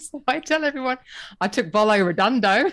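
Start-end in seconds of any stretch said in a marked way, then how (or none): 1.4-2.7 put-on, mock Australian accent. Retelling how they tell everyone about leaving their magazine job, in a put-on australian accent. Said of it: "if I said it in Australian accent".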